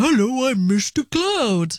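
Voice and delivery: very slow, silly puppet voice, words dragged out. Retelling her hand in the sock puppet the speaker's child made, Mr. Cloud sock puppet voice. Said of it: "started doing a voice".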